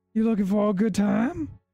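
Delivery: coy flirting in a very high voice. Voicing a made-up long-nosed Luxodon fluttering her eyes: flirtatious Luxodon woman. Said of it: "fluttering her eyes towards Alara".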